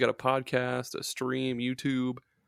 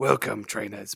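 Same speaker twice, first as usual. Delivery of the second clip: put-on grizzly, gruff old-man monster growl, almost British; 3 semitones lower than usual. Retelling a podcast intro attempt: grizzly Professor Oak voice. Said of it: "like a grizzly Professor Oak almost British accent".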